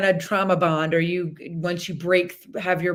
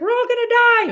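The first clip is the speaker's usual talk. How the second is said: shrill, very high, loud, terrified panicked wail; 6 dB louder than usual. Explaining a horse's fear reaction with a plane passenger: imitating a panicking plane passenger. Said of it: "the lady on the plane that's like".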